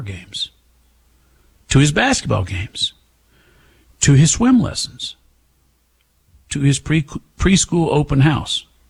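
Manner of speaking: choked-up voice, catching in the throat. Telling how neighbors kept showing up to a little boy's events, choked up. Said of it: "I get choked up".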